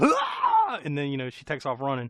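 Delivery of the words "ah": sudden high put-on scream. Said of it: "he starts screaming".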